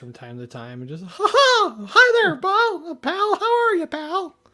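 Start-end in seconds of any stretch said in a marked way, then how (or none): 1.0-4.3 very high-pitched, loud and slow voice. A parent shows the voice they do to entertain their small kids, Mickey Mouse voice. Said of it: "I'd I'd bust out the voice".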